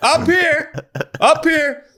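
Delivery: high-pitched, slow, calling-out voice. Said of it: "the fucking catcher would just stand up".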